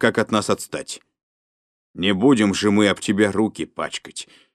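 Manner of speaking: ordinary talk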